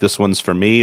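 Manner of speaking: normal talking voice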